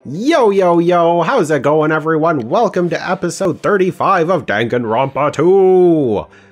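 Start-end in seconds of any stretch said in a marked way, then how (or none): 2.5-6.2 TV announcer voice, the word "two" drawn out. Opening an episode of Danganronpa two, announcing it like Dragon Ball Z. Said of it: "announce that like Dragon Ball Z".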